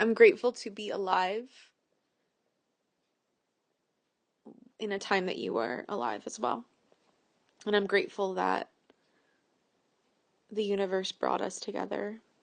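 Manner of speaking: tearful, rushed, choking up, close to crying. Speaking directly to someone they are thinking about, about to cry. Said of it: "I'm gonna cry".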